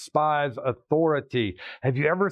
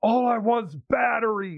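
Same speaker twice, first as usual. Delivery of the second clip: mock abrupt, blurted, sudden high-pitched outburst; 8 semitones higher than usual. Retelling a lady in a hardware store line: retelling a sudden outburst. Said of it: "all of a sudden she outbursts".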